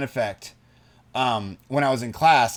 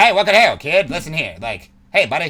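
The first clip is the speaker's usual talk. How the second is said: put-on loud 1920s-style old-timey telemarketer patter; 2 semitones higher, 6 dB louder than usual. Speaker imitates the voice another speaker just did, an old-school 1920s-30s telemarketer voice. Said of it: "old school like nineteen like I think it's nineteen thirties twenties telemarketer".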